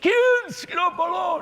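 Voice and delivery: put-on high, loud old-man shout.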